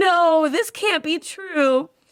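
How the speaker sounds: very slow, drawn-out, high panicked yell. Retelling being home alone in a blackout: imitating a panicked yell. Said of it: "in a panic, I was yelling".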